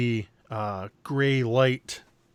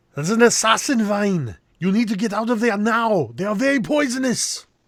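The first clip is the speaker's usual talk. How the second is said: loud, high, belted put-on movie-star delivery; 9 semitones higher, 5 dB louder than usual. Voicing a character warning a player to flee: Arnold Schwarzenegger voice. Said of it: "Sounded like Arnold Schwarzenegger".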